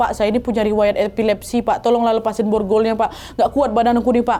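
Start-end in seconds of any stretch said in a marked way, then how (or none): none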